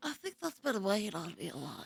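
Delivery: very quiet, almost inaudible speech. Imitating a teacher in a video who can barely be heard: imitating the teacher's barely audible voice. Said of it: "The way that you just did an impression".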